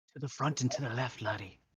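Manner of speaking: whispering. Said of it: "I'm gonna whisper back to Evander".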